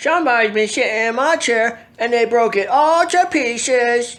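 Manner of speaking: put-on loud, very high, tiny squeaky baby voice. Narrator reading the three bears story, voicing Little Bear's small squeaky baby voice. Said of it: "in a small squeaky baby voice".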